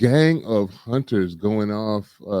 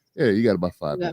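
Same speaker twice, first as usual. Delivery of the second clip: put-on offhand, casual, nonchalant tone; 3 semitones lower than usual. Retelling how a character changed the deadline: imitating a nonchalant tone. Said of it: "without skipping a beat".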